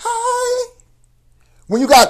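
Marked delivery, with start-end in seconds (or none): 0.0-0.7 very high, lifted, drawn-out light tenor voice. Showing how someone with a bass voice must greet people, higher tenor voice. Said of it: "you almost have to put tenor in your voice".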